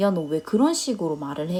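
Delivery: ordinary talk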